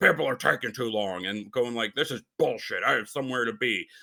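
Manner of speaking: put-on grumbling voice of a man. Retelling how a man in line behind at self-checkout grumbled: imitating a man grumbling. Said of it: "the guy who was behind me just starts grumbling".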